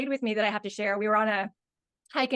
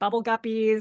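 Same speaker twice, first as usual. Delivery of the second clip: ordinary delivery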